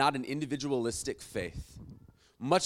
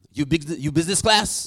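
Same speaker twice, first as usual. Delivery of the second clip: bad fake French accent, higher, louder, slower; 3 semitones higher, 8 dB louder than usual. Retelling what the guy at the lounge asked the speaker, in a really bad french accent. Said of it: "This is a really bad French accent".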